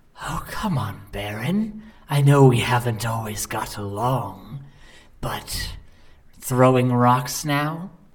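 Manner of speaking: wolf voice changing partway through speech. Voicing a wolf that speaks to Baron after a thrown rock: wolf speaking in shifting voice. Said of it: "it almost sounds like your voice. Uh, but then it shifts".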